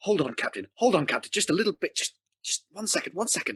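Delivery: muttering under the breath. Ignatius, holding his action, speaking to the Captain, muttering under his breath. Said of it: "he's saying under his breath".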